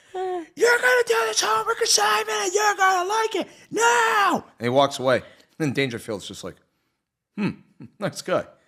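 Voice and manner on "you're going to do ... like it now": mock piercing, very high-pitched scream. Speaker retelling the teacher scene from Back to School, retelling Kinison screaming. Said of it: "Kinnison's just screaming".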